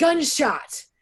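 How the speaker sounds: loud high-pitched yelling. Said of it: "my husband yells".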